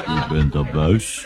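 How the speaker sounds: dull, low, slow, lifeless level delivery. An old man answers a visitor who shouted into his ear, in a dull voice. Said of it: "zei de oude man met doffe stem".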